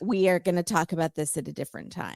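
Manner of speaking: ordinary talk, nothing marked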